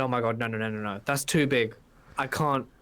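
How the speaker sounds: ordinary delivery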